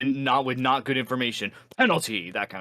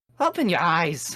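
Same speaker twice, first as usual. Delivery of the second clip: bad, higher Scottish accent drifting into Irish; 5 semitones higher than usual. Voicing a game character, attempting a Scottish accent: bad Scottish accent. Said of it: "that's terrible".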